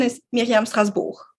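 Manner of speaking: name pronounced the French way, French accent. Showing how her name sounds in French: French accent. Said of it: "but with the French accent".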